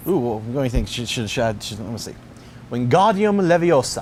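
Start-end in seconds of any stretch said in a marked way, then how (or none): 2.7-4.0 horrible put-on British accent, high and loud. Speaker tries out a Harry Potter spell in a horrible British accent. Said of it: "that was a horrible British accent".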